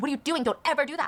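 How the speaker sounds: put-on alarmed screaming, blurted. Retelling zookeepers stopping someone at a cage door: imitating people screaming. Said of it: "the other zookeepers are screaming at him".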